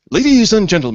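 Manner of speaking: loud, booming announcer voice with full showmanship. Introducing a guest with a prepared introduction, announcer voice. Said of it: "I have to get out my best announcer voice for this".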